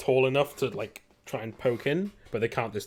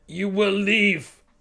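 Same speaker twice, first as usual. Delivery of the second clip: shouting at very high pitch; 10 semitones higher, 4 dB louder than usual. Narrator voicing a man the players hear shouting at them: shouting through something. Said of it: "you hear him shouting like through".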